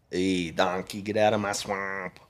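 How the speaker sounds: bad, so-so cartoon ogre voice. In casual chat, the speaker tries a Shrek impression. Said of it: "That's my best Shrek impression".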